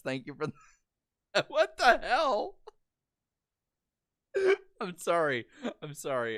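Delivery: high, wobbling, stifled laughter mid-sentence. Thanking viewers for their super chats on stream, trying not to laugh. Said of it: "I swear I'm trying to keep it together".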